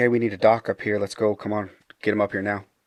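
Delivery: acted yelling. Retelling calling down the stairs for a doctor for someone not breathing, retelling a yell. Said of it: "I yell down the stairs".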